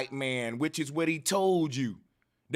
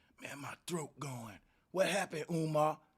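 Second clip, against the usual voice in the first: mock sore-throat voice, quieter; 9 dB quieter than usual. Mocking someone who screamed through a lecture: imitating a strep throat voice. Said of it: "Sounding like you got strep throat".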